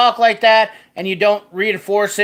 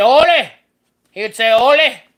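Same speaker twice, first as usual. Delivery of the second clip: put-on Norwegian accent, pitched higher; 4 semitones higher, 4 dB louder than usual. Retelling how a Norwegian grandfather called out: imitating grandfather's Norwegian accent. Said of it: "He had that Norwegian accent".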